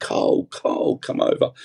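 play-acted drawn-out, stretched, held-back screaming call. Retelling a video of calling someone over: imitating his own screaming. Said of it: "I'm screaming".

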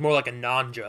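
imitated deadpan, flat delivery. Retelling a movie scene after a ninja attack: imitating John Goodman deadpan. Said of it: "with the straightest face".

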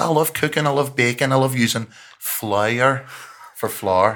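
put-on high, wild, all-out Irish accent. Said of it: "the maddest, uh, Irish accent".

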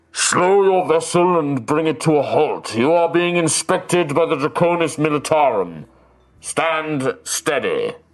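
dragon voice, slow, deliberate, drawn-out. Voicing a dragon ordering the ship to halt: booming dragon voice. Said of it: "there is a booming voice".

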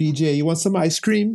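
put-on slight, mild Caribbean accent. Retelling how mom offers ice cream: imitating mom's slight Caribbean accent. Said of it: "she has a little accent, and she's from the Caribbean".

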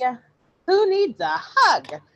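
very high, shrill, swooping cartoon duck voice. Describing a cartoon plot where Donald's anger bursts out, Donald Duck voice. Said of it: "if I can even do the voice".

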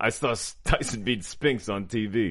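strange, odd put-on Belgian accent. Prompted to deliver a line, the speaker tries a Belgian accent. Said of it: "What accent was that?".

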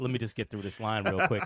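usual speaking voice

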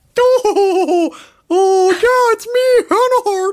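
slow, high, stretched-out oh's. Imagining being recognized by people, answering in a Hannah Hart impression. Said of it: "it was you doing my impression of your voice".

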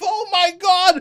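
high, loud panicked scream.

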